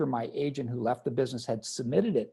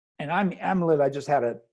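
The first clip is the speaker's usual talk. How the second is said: ordinary delivery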